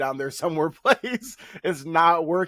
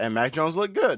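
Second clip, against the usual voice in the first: voice cracking and breaking. Talking football with a co-host, voice cracking. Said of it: "Crazy voice crack there".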